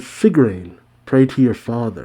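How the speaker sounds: ordinary talk, nothing marked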